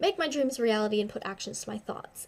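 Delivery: normal talking voice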